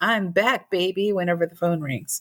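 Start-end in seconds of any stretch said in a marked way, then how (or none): none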